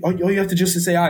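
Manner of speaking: normal talking voice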